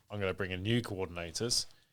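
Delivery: ordinary delivery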